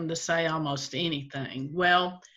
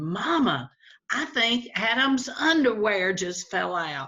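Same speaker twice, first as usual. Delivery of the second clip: put-on boy's voice, amazed, astonished outcry; 4 semitones higher than usual. Telling a joke, voicing a little boy: imitating an astonished exclamation. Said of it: "with astonishment in his voice, he exclaimed".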